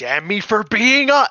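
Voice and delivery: loud, high-pitched screaming.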